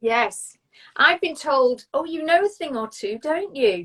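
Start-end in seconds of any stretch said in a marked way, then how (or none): 1.9-3.8 condescending, patronizing tone, pitched up. Retelling what people have said to the speaker, in a mock-condescending pitch. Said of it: "in a very condescending pitch".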